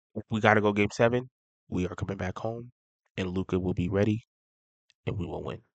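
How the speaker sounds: very low, deep, grave, dead-serious firm voice. Predicting how the series will end for listeners, serious voice. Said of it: "I said it in my serious, serious voice".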